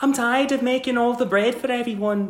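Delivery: put-on British servant accent. Recommending the show, the speaker imitates how the kitchen character talks, Downton Abbey kitchen character impression. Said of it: "All she does is talk like this".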